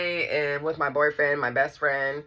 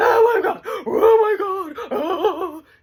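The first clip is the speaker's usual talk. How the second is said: put-on screaming and bawling, very high and drawn-out; 5 dB louder than usual. Retelling a sister wailing at a funeral: imitating screaming and bawling. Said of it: "screaming, you know, bawling".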